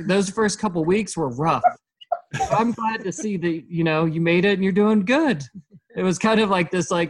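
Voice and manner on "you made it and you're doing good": funny, sarcastic, sing-song put-on voice. Retelling the talk Janessa gave after the rough first weeks, imitating Janessa's funny sarcasm. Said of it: "Said in a funny, sarcastic way".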